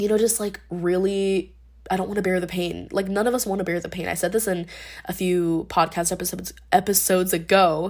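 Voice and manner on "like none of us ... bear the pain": rushed, very fast talk, stumbling over words. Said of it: "I'm talking so fast that I'm, like, stumbling over my words".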